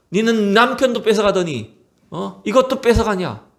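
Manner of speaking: high-pitched angry outburst.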